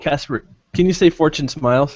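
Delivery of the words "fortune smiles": normal talking voice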